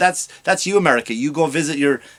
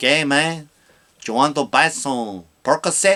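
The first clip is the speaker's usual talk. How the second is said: put-on Mexican accent. Retelling offers from sellers in Mexico: imitating a Mexican accent. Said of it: "I loved the accent".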